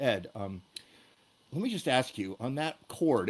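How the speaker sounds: hushed, soft, quiet voice. Retelling a drummer leaning over during rehearsal to ask him something, quiet voice. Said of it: "in a quiet voice".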